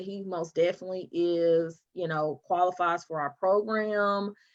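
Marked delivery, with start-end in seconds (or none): none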